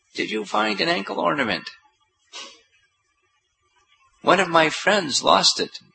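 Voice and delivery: put-on high, creaky old lady voice. Narrator telling how the disguised Lalita Sakhi asks Dukhi Krishna Das, in an old lady's voice. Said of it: "in an old lady's voice asked".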